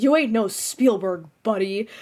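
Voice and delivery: dead serious, earnest, no joking. Quoting a funny line from the show: imitating Doc, dead serious. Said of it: "he says it so incredibly seriously".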